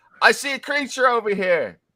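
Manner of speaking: shouting. Voicing unseen enemies who spot a creature nearby: shouting. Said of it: "you hear shouting".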